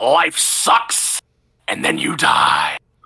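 low, very slow, every word drawn out. Quoting a favorite saying as a Vince McMahon impression. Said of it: "as impersonating as I can".

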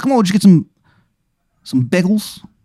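put-on Philly accent. Running a game for Kev, voicing the wizard in a trashy Philly accent. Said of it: "His accent is just Philly trash".

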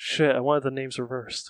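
mumbling under breath. Playing a character who mumbles a complaint: mumbling under his breath. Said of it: "Dylan mumbles under his breath".

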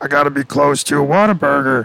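frog-like felt puppet voice. Imagining what Patrick Mahomes would say about Whataburger: Patrick Mahomes impression. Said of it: "a good Patrick Mahomes impersonation".

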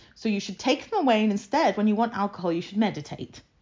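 normal talking voice

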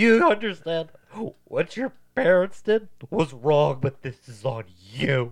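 mock, very loud, high, sniveling tearful sobbing. Recapping a story about a ghost, mimicking her sobbing, sniveling voice. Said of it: "you got to do it with her sobbing, sniveling, fucking voice".

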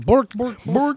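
high-pitched, Swedish-sounding nonsense gibberish voice. Joking that another person acts like the Swedish Chef: Swedish Chef voice. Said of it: "He's like that Swedish chef".

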